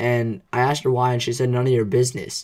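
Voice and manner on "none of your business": put-on angry, pissed-off tone. Retelling what an angry girl said when asked why: imitating an angry reply. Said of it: "she was all pissed off at me again".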